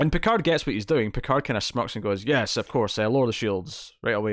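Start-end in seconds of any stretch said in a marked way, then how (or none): none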